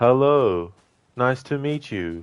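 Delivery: very slow, bland, emotionless, lifeless delivery. Showing how game characters deliver lines: imitating bland unemotional NPC. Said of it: "very bland and very unemotional".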